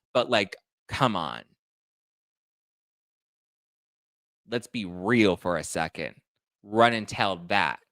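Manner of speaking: heated, fired-up, worked-up rant. Speaking up for a man with two little girls at home: heated. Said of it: "Sorry, I got a little heated".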